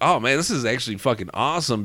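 normal talking voice

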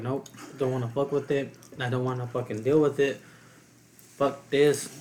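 normal talking voice

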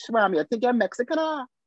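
put-on, high Trinidadian accent. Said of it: "I went back to Trinidad and I say Padilla, and they say".

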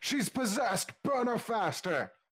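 very high-pitched, shrill yelling and shouting. Narrating a game scene, voicing the crowd of cultists at a burning: yelling. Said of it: "they all start yelling".

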